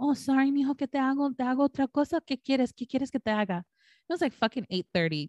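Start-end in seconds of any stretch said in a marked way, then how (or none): 0.0-3.6 doting, pitched-up motherly voice. Retelling how mom answered his refusal at dinner: imitating her mom. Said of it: "And my mom would be like".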